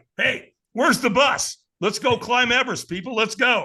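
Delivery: pumped-up, rousing rallying delivery.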